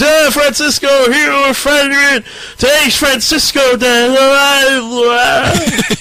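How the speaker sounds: mock drunk crowd voice. Voicing a cheering crowd at a party, acting drunk. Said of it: "you were acting drunk".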